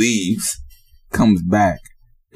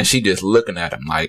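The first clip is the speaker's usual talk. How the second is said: normal talking voice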